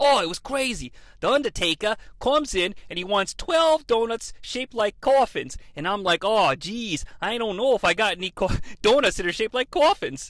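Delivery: poorly done put-on Boston accent. Retelling a Dunkin' Donuts worker's interview about the Undertaker, bad Boston accent. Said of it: "That's a really shitty attempt at, like, a Boston accent".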